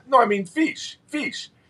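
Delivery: put-on very high-pitched voice with Russian accent. Retelling a visiting guest's question on a prison tour: deep Russian accent. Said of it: "in that deep Russian accent".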